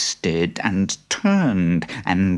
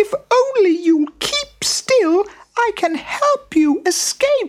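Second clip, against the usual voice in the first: tiny, very high, squeaking mouse voice; 3 dB louder than usual. The little mouse runs to the lion and speaks up, squeaky mouse voice. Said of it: "he squeaked".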